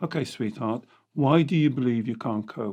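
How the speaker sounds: gentle, non-aggressive tone. Showing how to speak kindly to your inner child, in a soft gentle voice. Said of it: "you do not raise your voice".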